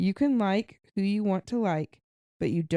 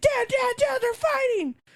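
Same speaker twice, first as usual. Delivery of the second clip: put-on thrilled shrieking, very high; 3 dB louder than usual. A dad recalls his son seeing a fight in sports; imitating Jackson's excited screaming. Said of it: "he will like freak out and scream".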